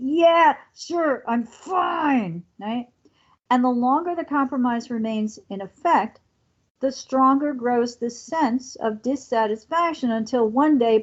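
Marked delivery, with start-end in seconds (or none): 0.0-2.4 through clenched teeth, very slow, finely drawn out. Acting out answering a partner who asks if we're okay, through gritted teeth. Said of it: "saying through gritted teeth".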